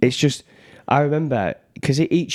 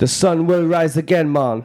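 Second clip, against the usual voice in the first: put-on Jamaican accent, pitched up; 5 semitones higher than usual. Asked to show their best accent, speaker tries one: put-on Jamaican accent. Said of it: "What's your best?".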